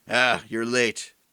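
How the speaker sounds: rough, gruff character voice. Describing an important NPC who sits down at your table, in a gruff voice. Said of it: "had a gruff voice".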